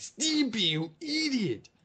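screechy, very high cartoon shriek with wild pitch swoops. Speaker recalls how someone used to imitate a cartoon, doing a Ren impression. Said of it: "could do a spot-on Ren impression".

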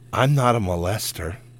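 slow, eerie, unsettling creepy voice. Retelling what a man said to them while his dog snarled, imitating a creepy voice. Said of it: "in the creepiest voice you've ever heard".

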